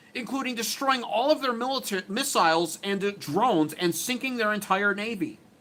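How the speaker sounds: high, mocking, wimpy-sounding put-on voice. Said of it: "read it in his pussy-sounding voice".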